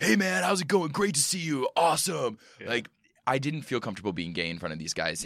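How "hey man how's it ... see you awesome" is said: very high, loud, hyper-masculine sales bro voice. Describing auto show dealers at work, imitating them in a hyper-masculine sales bro voice. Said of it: "They are hyper-masculine sales bros".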